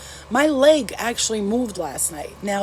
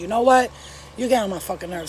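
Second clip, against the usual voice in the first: usual speaking voice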